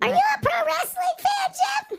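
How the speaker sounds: very high, shrill, loud, squeaky cartoon chipmunk voice. Asking Jim the question again, this time in a chipmunk voice. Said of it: "I'll use the chipmunk voice".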